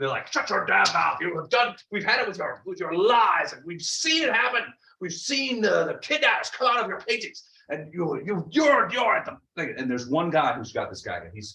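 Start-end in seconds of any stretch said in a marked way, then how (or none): 0.3-9.7 high, angry, put-on yelling. Voicing townsfolk accusing an artist of lies: yelling accusations. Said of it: "yelling and sort of making accusations".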